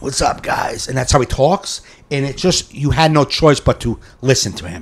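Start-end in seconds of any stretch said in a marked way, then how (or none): 0.0-0.9 scratchy rasp through the words, raspy put-on voice. Showing how a funny guy with his own material talks, imitating a raspy voice. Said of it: "He's got like a raspy voice".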